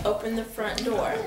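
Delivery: normal talking voice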